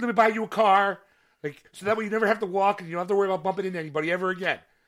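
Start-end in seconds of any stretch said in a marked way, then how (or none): 0.0-1.0 loud, excessively polite, overly nice voice. Imitating an overly nice guy who bumped into someone: imitating an overly nice guy. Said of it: "the overly nice person where it's like".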